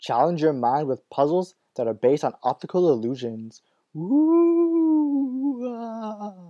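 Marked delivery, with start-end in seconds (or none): 4.0-6.3 very high, drawn-out spooky ghostly ooh. Reading out a game release announcement, in a ghostly voice. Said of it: "I just come up with a ghostly voice".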